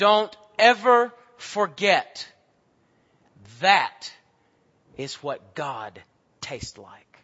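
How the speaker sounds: booming, swooping, commanding, authoritative voice. Retelling what a man told the children after they tasted honey, booming authoritative voice. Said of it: "he says in this booming authoritative voice".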